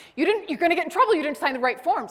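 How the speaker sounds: frantic, alarmed, high, loud panicked shouting. Retelling how a bank worker ran up to them: imitating a panicked shout. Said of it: "she's shouting at me in Spanish in a total panic".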